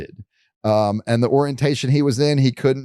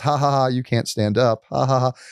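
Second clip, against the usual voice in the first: acted, taunting, mocking, jeering laugh. Talking about tight spots, acting out the little voice in their head: imitating a mocking inner voice. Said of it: "this little voice always like laughs at me and says".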